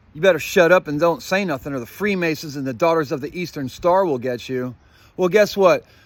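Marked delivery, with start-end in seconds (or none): none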